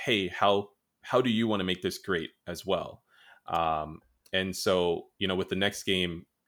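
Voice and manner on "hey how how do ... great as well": normal talking voice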